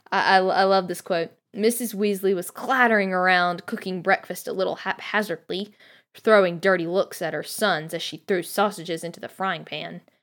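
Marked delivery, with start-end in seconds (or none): none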